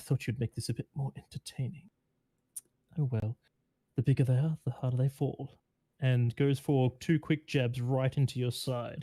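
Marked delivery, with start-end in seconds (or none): 0.0-5.6 whispered taunt, faster. A fighter gets in close to the player before jabbing: whispered taunt. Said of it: "she whispers to you, she goes".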